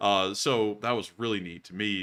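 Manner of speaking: normal talking voice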